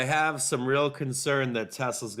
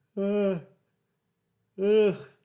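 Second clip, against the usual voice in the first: pitched-up mumble spoken through a yawn; 9 semitones higher, 5 dB louder than usual. A guest who has been put on the call, yawning. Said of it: "Sorry for yawning".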